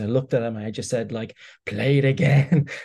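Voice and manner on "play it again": put-on old, cigar-chomping man's voice. Retelling what you said to him at the screen, in an old cigar-chomping bookie voice. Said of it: "my voice metamorphosed into that of like a 65-year-old cigar chomping".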